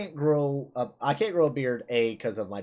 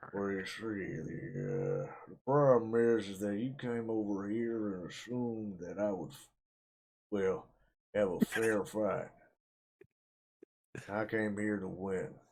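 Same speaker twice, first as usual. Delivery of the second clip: low, hushed put-on voice from side of mouth; 5 semitones lower, 8 dB quieter than usual. Showing how to do a voice by talking from one part of the mouth: demonstrated put-on voice. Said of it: "you gotta like kind of talk out of this part of your mouth".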